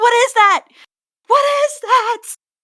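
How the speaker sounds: high-pitched, loud, panicked outburst.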